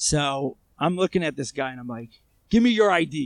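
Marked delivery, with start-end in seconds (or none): 2.5-3.3 high, loud, aggressive barked delivery. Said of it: "I'm being very aggressive with him".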